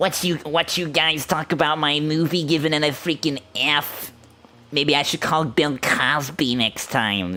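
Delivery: put-on high grumpy kid voice, nasal with nose held. Doing an impression of Gabra complaining about the movie's grade: Gabra impression, grumpy kid holding nose. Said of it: "a grumpy kid's voice where you hold your nose".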